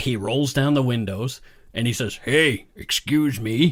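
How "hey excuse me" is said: man's voice calling out loudly to others. Retelling a man calling to ladies from a car window, imitating the man. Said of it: "he talked like this".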